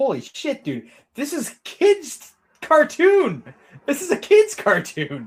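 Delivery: shocked, horrified, very high and swooping disbelief. Talking about a Batman cartoon, the speaker acts out his own reaction: retelling his own horror. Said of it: "I was pretty horrified when I saw it".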